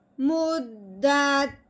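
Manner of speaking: pitch drops at the end of मुद्दत. Showing how a finished statement sounds: falling pitch at end of मुद्दत. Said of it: "यानी कि अपना लहजा नीचे की तरफ लेके आए हैं।".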